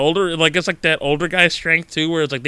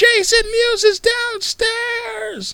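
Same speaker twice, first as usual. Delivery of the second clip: acted, very high, drawn-out, stretched-out shriek. Waiting in line to see Kevin Smith, retelling a girl's scream. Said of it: "Some girl screams".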